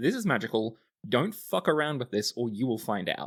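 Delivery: ordinary delivery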